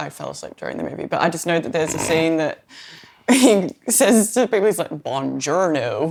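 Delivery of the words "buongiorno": put-on slow Italian words in a heavy American accent. Retelling a movie scene where a man greets people, slow heavy American accent. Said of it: "with this like really heavy American accent".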